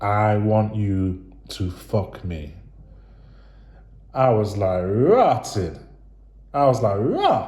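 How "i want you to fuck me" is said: whispered, much slower. Repeating for emphasis what she whispered earlier, retelling a whisper. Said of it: "let me say that again".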